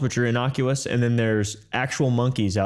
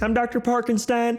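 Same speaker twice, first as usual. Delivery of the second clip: put-on very high, small, young male voice, pitched way up; 12 semitones higher than usual. Describing a TikTok creator, then imitating how he sounds: Doctor Parkenstein's voice. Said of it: "he sounds like this".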